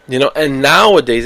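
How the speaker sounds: plain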